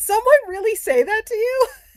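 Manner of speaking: very high, shrill, loud voice, way above normal. Retelling a coworker's reaction to a remark: imitating a much higher voice. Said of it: "five octaves higher voice than usual".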